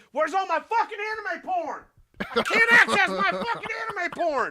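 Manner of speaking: very high-pitched, loud screaming fit. Acting out a hypothetical guy screaming at his assistant, mock screaming. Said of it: "He's like screaming at his assistant".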